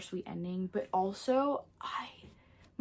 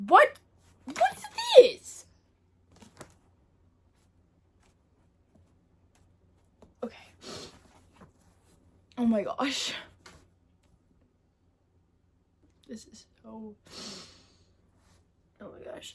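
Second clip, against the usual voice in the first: tearful, crying while talking, higher and louder; 3 semitones higher, 6 dB louder than usual. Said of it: "I'm literally crying".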